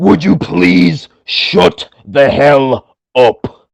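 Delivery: every word dragged out, very slow. Showing off an impression to top the other speaker: Drew McIntyre impression. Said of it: "the master will do his Drew McIntyre impression".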